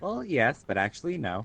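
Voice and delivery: ordinary delivery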